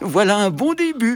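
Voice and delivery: whistled cheerfully. Narrator voicing the little locomotive as it escapes, whistled cheerfully. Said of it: "siffla-t-elle gaiement".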